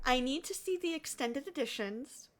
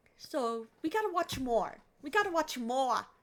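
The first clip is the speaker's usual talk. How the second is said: put-on New York accent. Talking about watching more Digimon episodes: New York accent. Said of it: "I'm going New York".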